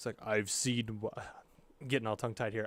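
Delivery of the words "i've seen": low rumbling voice. Describing a scene to a listener, voicing a figure with a low rumbling voice. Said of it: "a low like rumbling voice".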